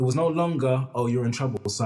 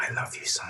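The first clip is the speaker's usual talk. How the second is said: soft, quiet, hushed whisper; 9 dB quieter than usual. Retelling saying goodnight to a son at bedtime: retelling own whisper. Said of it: "I whisper to him".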